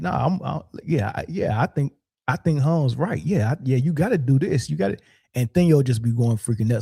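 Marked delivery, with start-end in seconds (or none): 0.0-5.0 insincere, dripping-sarcasm, mock tone. Retelling how Charlie sarcastically sides with Hung: imitating Charlie being sarcastic. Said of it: "you could tell he's being sarcastic".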